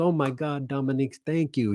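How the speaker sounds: put-on German accent, a best attempt. Quoting a woman coming back from a break, in a German accent. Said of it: "That's my best German accent I can do".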